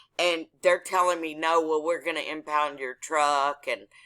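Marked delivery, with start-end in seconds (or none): none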